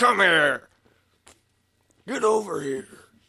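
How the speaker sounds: loud, drawn-out yell. Acting out a reversal in a joke: Scorpion voice. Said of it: "Like Scorpion".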